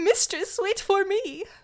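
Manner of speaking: high, slow ferret character voice. Recapping a story, doing the ferret's voice as he follows her. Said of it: "how well you are at doing his voice".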